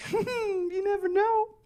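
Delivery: very high, drawn-out cartoon character voice. Imitating people who doubt he is done having kids: Pillsbury Doughboy voice. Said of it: "they say it like the Pillsbury Doughboy".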